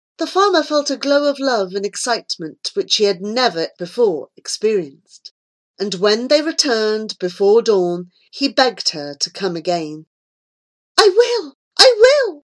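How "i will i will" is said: very high, happy, joyful cry. The farmer begs her to come again and she answers; exclaiming happily. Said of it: "she exclaimed happily".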